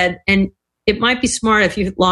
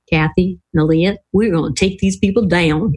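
put-on good American southern accent; 2 semitones lower than usual. Speaker retells what Pascal leaned over and said, imitating Pascal's southern voice. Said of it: "with that wonderful southern voice".

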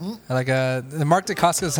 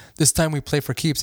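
ordinary talk, nothing marked

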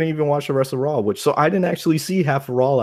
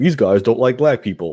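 ordinary talk

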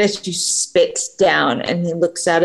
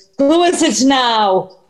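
rather exasperated, fed-up, pitched-up voice; 5 semitones higher than usual. Game master voicing someone behind a door answering a knock, exasperated voice. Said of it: "a voice through the door sounding rather exasperated".

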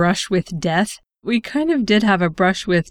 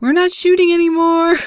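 mock, very high, hollered shout; 10 semitones higher, 3 dB louder than usual. The speaker retells how the shooters yelled back at them: retelling a yell. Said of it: "And they yelled back".

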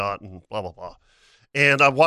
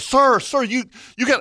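put-on high, drawn-out calling yell; 10 semitones higher than usual. Retelling warning a man who stood near a gator: retelling own yell. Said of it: "so I'm yelling".

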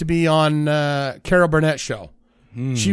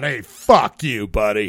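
low-pitched, slow, unhurried delivery; 6 semitones lower than usual. Imitating Lucille Ball smoking off set: imitating Lucille Ball off set. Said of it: "she's smoking cigarettes and going".

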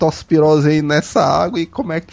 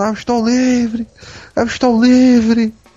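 pitched-up, joyful shout; 6 semitones higher than usual. Retelling leaving a job he celebrated quitting, retelling a joyful shout. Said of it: "E o cara saiu gritando".

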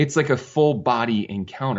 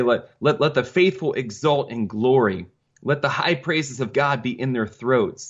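normal talking voice

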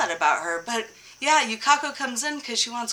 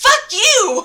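shrill, furious, loud screaming yell; 12 semitones higher, 12 dB louder than usual. Retelling a scene where a character yells after a car crash: imitating an angry yell. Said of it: "And she's like".

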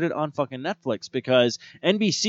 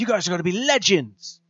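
clumsy, badly done, put-on British accent; 3 semitones higher than usual. Describing what a trench-coat character tells the group, in a bad accent. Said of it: "I do accents not very well sometimes".

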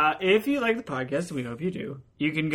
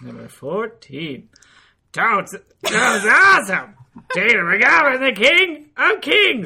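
put-on parrot voice, much higher and louder; 7 semitones higher, 9 dB louder than usual. Reading out number 14 on a list as asked, in an Iago voice. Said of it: "I'll do Iago".

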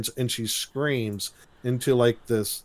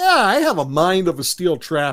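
mock-indignant, put-on indignation, slower pace; 6 semitones higher, 5 dB louder than usual. Recounting a story, speaker acts out Eric's reply, imitating Eric being indignant. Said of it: "gets all indignant and goes".

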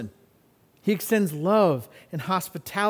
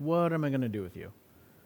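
put-on mutter under breath, much lower, quieter; 5 semitones lower, 8 dB quieter than usual. Speaker acts out what her mom would say to her, muttering under her breath. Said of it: "She absolutely said things like that under her breath".

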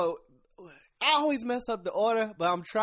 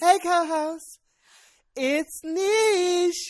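very high, very slow voice, "Niche" drawn out; 9 semitones higher, 4 dB louder than usual. Doing the co-host's catchphrase in the co-host's voice: imitating co-host's voice. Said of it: "What is that voice?".

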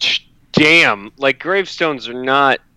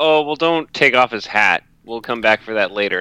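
ordinary talk

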